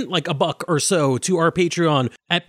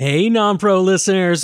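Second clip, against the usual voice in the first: creepy put-on voice, slower pace; 3 dB louder than usual. Opening a Patreon-only episode of the show, greeting listeners in a creepy voice. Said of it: "sorry for using that creepy voice".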